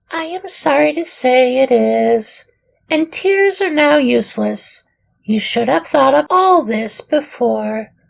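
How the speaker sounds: tiny, very high little dormouse voice. A narrator voicing the fat little dormouse who lived upstairs, little dormouse voice. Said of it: "a fat little dormouse who lived upstairs".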